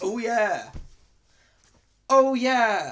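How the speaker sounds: huge booming cry, very loud, high, slow, stretched-out. Answering what the Kool-Aid guy says: Kool-Aid Man voice. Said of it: "He goes".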